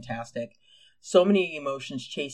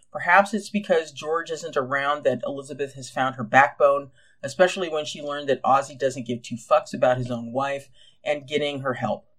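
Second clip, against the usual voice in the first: plain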